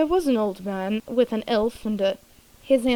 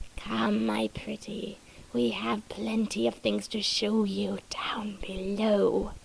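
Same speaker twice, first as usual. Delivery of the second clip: rough, raspy, gleeful monster croak; 6 dB quieter than usual. An orc speaks to a trapped man in a story, in a croaking raspy voice. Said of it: "he croaked in a raspy voice".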